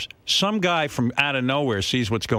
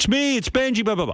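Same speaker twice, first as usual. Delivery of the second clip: put-on screeching outburst, very high, shrill; 10 semitones higher than usual. Retelling how Benji screamed at Star Jones: imitating someone screaming. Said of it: "then Benji starts screaming at Star Jones".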